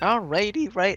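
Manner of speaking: voice breaking and cracking mid-word. A caster setting up a match lobby says a quick line, voice cracking. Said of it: "voice crack".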